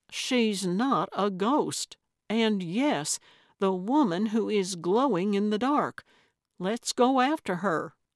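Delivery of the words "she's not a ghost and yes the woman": usual speaking voice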